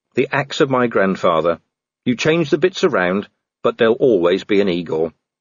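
ordinary delivery

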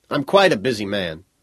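plain reading voice

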